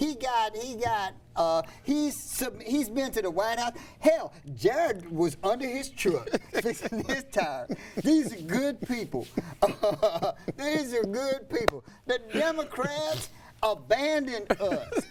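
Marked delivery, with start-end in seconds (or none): 8.0-15.0 put-on humble, sincere, folksy country voice. Quoting a man's most sincere speech, imitating a humble redneck voice. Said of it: "his best humble cr- uh, cracker redneck voice".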